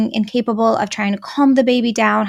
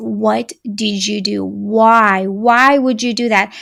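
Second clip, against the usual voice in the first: mock enraged, out-of-control scream, "why" drawn out. Parent recounts losing control and screaming in their toddler's face: retelling a scream. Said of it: "I like screamed in his face".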